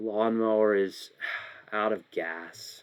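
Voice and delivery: sheepish, ashamed, slow admission. Showing tone through voice in an acting game: ashamed tone. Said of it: "I tried to sound ashamed right there".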